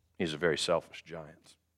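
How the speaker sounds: ordinary delivery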